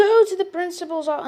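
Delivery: put-on high screaming. Retelling being sent to the principal: imitating a teacher screaming. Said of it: "Miss screams at me".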